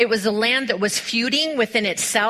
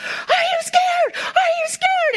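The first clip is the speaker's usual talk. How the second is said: acted yelling, pitched way up, slow, drawn out. Retelling how a man yelled at the young bull riders, retelling a yell. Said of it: "he's yelling at them".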